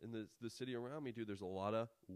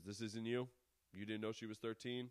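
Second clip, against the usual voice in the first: confrontational TV host-style delivery. Acting out Chris Hansen reading the text aloud: imitating Chris Hansen. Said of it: "he fucking reads the text and he's like".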